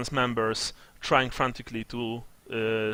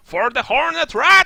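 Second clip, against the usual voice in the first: piercing, very high, very loud shrieking war cry; 11 dB louder than usual. Voicing rat warriors charging with glaives: shrieking war cry. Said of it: "uttering shrieking war cries".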